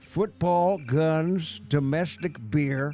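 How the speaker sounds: loud, high fake American accent, drawn-out "guns". While playing a game, the speaker says a line in a fake American accent. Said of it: "Adam's luscious fake American voice".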